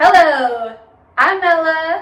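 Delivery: booming, high awards-show host announcer voice. Doing a demonstration of people who host the Emmys: imitating an Emmy host. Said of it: "we're gonna do a demonstration of, like, people who host the Emmys".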